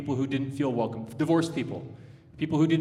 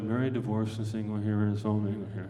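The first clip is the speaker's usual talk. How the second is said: low, rote, trained pulpit reading voice; 5 semitones lower, 4 dB quieter than usual. A pastor shows how people read aloud in church, in a trained churchy reading voice. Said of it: "So let's not read it like that".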